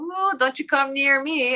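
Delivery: high put-on jinn voice. Telling a jinn legend about the tree's hooked nails: voicing a jinn in the tree. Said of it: "the hooks are their nails, you know, like long nails going".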